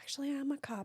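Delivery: soft, almost under the breath, reluctant tone. Retelling what a lady at a nail salon said: imitating someone saying it quietly. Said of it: "she said it so quietly".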